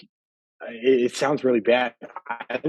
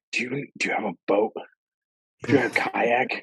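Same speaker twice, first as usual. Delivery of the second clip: imitated whisper. Retelling a phone call where a friend whispered urgent questions: imitating Kevin whispering. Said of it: "He's, like, whispering".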